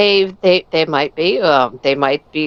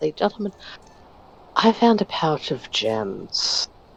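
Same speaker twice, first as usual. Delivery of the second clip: very quiet, hushed, confiding aside; 2 semitones lower, 7 dB quieter than usual. Telling the group about a found pouch of gems: said very quietly. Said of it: "I'm going to say this very quietly".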